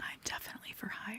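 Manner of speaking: breathy, very quiet, soft ASMR whisper. Answering a listener who said the voice sounded hot, in a soft ASMR voice. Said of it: "I'm for hire A S M R voice".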